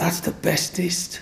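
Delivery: put-on high, slow, awed little-girl whisper.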